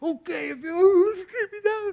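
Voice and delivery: very high, tearful, drawn-out whimpering voice. Recalling being kicked out at thirteen after a screaming match; imitating own past whimpering. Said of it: "And I was whimpering".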